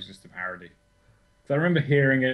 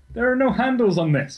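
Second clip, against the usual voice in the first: high, loud baffled exclamation. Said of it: "it's like".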